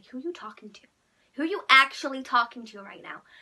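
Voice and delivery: loud, sassy American accent. Showing how you sound in an argument: sassy american accent. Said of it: "you sound like bust down in America. Like".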